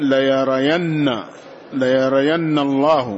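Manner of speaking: plain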